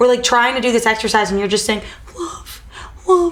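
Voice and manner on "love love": mock mopey, mournful tone, higher-pitched. Mocking how he always says this during their exercise, mock-sad voice. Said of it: "in like a sad voice".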